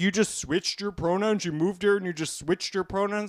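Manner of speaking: ordinary talk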